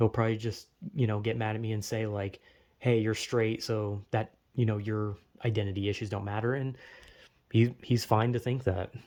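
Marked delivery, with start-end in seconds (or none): none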